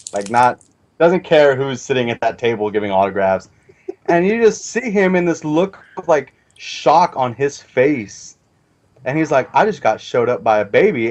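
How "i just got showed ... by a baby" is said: ordinary delivery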